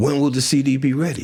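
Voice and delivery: mock eager, excited tone. Retelling a call with a music director: imitating someone excited. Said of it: "And he's all excited".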